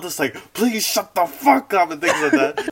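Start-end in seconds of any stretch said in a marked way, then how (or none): 0.5-1.9 pitched-up, pissed-off, exasperated, fed-up angry tone. Retelling how girls in a tent answered a screaming girl; imitating angry girls. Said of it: "they were pissed".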